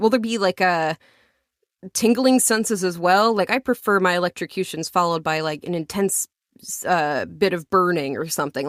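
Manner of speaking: plain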